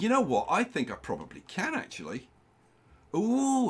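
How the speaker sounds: growing excitement, high-pitched and swooping. Working on the build, the speaker realizes a piece can be used, excited. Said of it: "Did I sound excited?".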